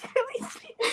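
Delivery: whispered, dumb, stupid put-on voice. Retelling a date who read the menu aloud in a stupid squeaky voice. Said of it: "doing that stupid ass voice".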